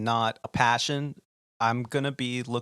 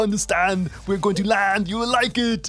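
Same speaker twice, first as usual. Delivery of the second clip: put-on Austrian accent, pitched much higher; 6 semitones higher, 4 dB louder than usual. Retelling how you answered the tower controller's landing clearance, speak in an Arnold voice.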